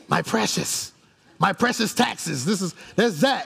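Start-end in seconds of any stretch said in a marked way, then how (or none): 0.1-2.4 evil little creature voice, rough and creaky. Describing a character from Lord of the Rings to listeners: Smeagol voice. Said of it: "There was a dude on there named Smeagol".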